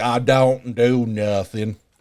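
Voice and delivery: very slow, thick, heavy Southern drawl. Repeating a coworker's phrase back to her: Forrest Gump accent. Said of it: "a Forrest Gump accent".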